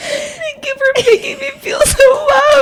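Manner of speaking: crying while talking. After the other speaker's story, speaker thanks them while crying. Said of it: "Why are you crying?".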